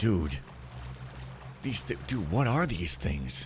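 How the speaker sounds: growled, growly delivery. Playing a character facing strange creatures, speaking in a growly voice. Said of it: "I said in a growly voice".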